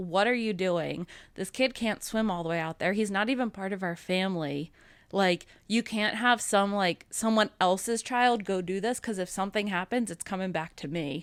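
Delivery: normal talking voice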